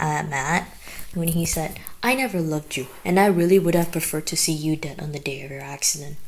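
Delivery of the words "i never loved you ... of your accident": ordinary talk, nothing marked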